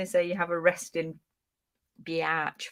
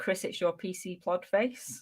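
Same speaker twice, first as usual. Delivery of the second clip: ordinary delivery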